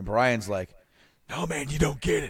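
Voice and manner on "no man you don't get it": raspy, hoarse-edged voice, pitched up. Retelling a tag partner's pep talk, raspy Brian voice. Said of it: "I was trying to do a raspy Brian".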